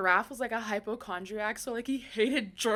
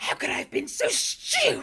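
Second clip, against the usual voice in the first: dramatic, come-in-hot, forceful delivery. Quoting Hermione's line from the first movie: Hermione voice. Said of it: "She gives me Hermione so bad".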